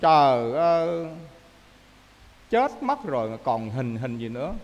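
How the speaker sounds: slow, low mock fortune-teller lament.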